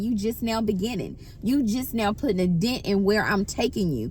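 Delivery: ordinary talk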